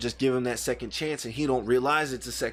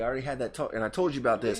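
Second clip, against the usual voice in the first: ordinary talk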